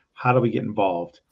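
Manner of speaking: usual speaking voice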